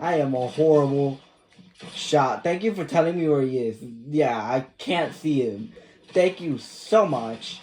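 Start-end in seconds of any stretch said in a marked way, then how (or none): 2.4-7.6 mildly mocking, tongue-in-cheek delivery. Thanking the game for showing where the enemy is: sarcastic. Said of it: "I'm being a bit sarcastic".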